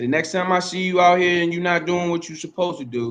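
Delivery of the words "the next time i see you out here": ordinary delivery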